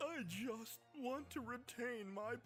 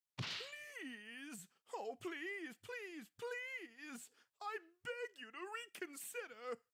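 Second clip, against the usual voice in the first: whiny voice, much higher pitch; 6 semitones higher than usual. Character begging another to reconsider a final decision, whiny voice. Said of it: "I recognize that whiny voice".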